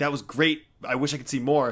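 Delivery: ordinary talk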